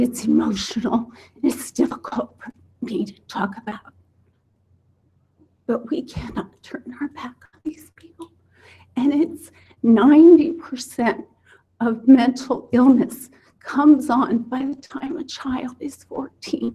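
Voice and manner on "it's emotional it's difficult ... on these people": soft, trembling, emotional, shaky voice. Speaking publicly about something difficult to talk about, with a shaking voice. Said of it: "You can hear my voice shake".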